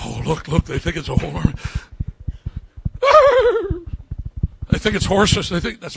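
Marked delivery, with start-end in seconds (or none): 3.0-5.5 high, very slow put-on horse voice. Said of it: "my best horse impersonation".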